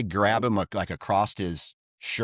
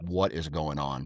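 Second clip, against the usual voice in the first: acted angry, indignant, pissed-off outburst; 5 semitones lower, 6 dB quieter than usual. Retelling a fight after being pushed down: retelling being pissed off. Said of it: "pissed off".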